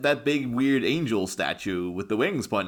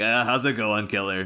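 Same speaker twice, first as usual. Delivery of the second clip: play-acted patronizing, chummy, condescending buddy-buddy tone. Imitating Terry greeting a hurt dog: condescending Terry imitation. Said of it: "it's almost a little condescending coming in".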